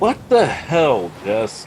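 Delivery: slow, loud, high-pitched shocked outburst.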